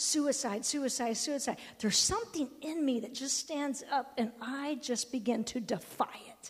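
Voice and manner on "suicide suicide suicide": ordinary delivery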